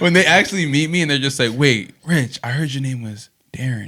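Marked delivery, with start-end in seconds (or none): 1.5-3.9 put-on whisper. Retelling how people react on meeting him: imitating someone whispering. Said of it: "Why are you whispering?".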